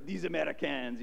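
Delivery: bad, horrible put-on Italian accent. Retelling how people in italy reacted to americans, horrible italian accent. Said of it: "that's a horrible Italian accent".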